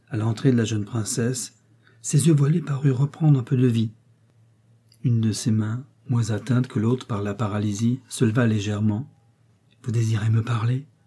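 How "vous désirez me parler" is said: gently and softly spoken. Lise leans toward a paralysed man and speaks softly. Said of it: "dit doucement Lise".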